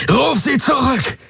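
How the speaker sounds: very high-pitched, furious, bellowing roar. Narrator reads a man's command as he holds a laser to her chin, roaring. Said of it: "brüllte er".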